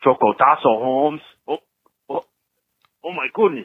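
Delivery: put-on Mexican accent. On National Chocotasso Day, holding a drink, speak in a put-on Mexican accent. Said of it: "I'm talking like a Mexican, bro".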